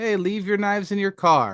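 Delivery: automated AI announcement voice, as over a speaker. Retelling an announcement over a speaker at the gate: imitating an ai talking voice. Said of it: "an A I talking voice going through a speaker".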